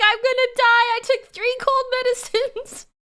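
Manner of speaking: play-acted very high, tearful, panicked crying. Retelling a panicked phone call to a nurse friend: imitating own past crying. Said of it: "I called her, like, crying".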